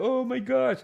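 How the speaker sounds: very high, innocent little puppy-dog voice. Imitating how someone sounds in his puppy act: imitating a puppy-dog act voice. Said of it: "he had this puppy act, like a little doggy puppy".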